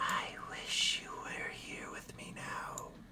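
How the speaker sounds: slow, drawn-out, hushed whispered character voice. Voicing a character that Watson hears, whispered character voice. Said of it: "I need a whisper for this guy".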